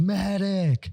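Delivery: mock all-out high shout at top of lungs. Retelling calling for a medic in the woods: imitating yelling at top of lungs. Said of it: "top of my lungs".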